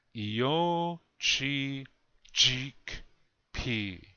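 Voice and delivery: very slow, each syllable drawn out and spaced apart. Asked to say the word one more time, saying it really slow. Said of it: "Really slow".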